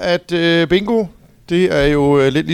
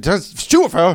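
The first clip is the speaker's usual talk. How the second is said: put-on shouting; 2 semitones higher than usual. Retelling calling out numbers as bingo warm-up: imitating shouting out a number. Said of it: "råber jeg ud".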